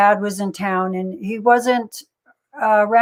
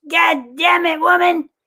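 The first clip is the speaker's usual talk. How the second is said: fed-up, put-upon, exasperated voice, pitched up high; 8 semitones higher than usual. Act out Stu answering the woman who wants her hair done, as a Stu Hart impression. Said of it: "I love your Stu Hart impression".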